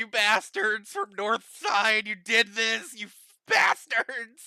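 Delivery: high, tearful, furious, sobbing angry outburst. A girl in the back with a gun screams at the group: crying and screaming. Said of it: "she's just like screaming at you".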